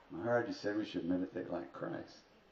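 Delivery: ordinary talk, nothing marked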